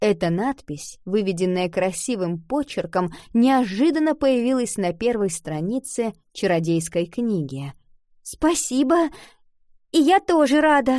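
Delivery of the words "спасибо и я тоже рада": shy, meek, timid, high little voice. Iva answers the magic book that has just welcomed her; timid. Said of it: "робко ответила книге девочка".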